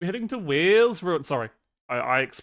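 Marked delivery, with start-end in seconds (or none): 0.0-1.2 almost-right Welsh accent, pitched up. Telling listeners where they are heading next; almost accurate Welsh accent. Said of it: "that was an almost accurate Welsh accent".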